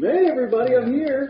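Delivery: put-on shrill, very high, full-steam yell. Playing a character running into a bank, yelling in: yelling in character. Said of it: "manipulate my voice and, uh, yell in".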